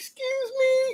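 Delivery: woman's tiny, very high, soft, squeaky voice.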